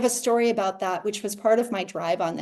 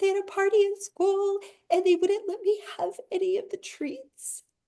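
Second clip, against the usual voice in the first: mock very high, near-tears little girl voice; 12 semitones higher than usual. A mom retells her child's complaint about a school party: imitating a child near tears. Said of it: "almost in tears and her little bottom lip was quivering".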